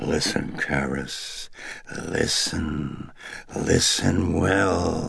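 very slow, rough, rasping demon voice. Reading a demon's words to a man listening at the bedside; raspy demon voice. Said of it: "as the demon rasped".

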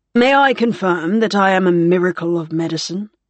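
ordinary delivery

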